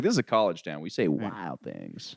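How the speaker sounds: put-on heavy Southern accent, low, hushed, very quiet. Imitating a big guy who talked in a thick Southern accent. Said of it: "He had a thick Southern accent".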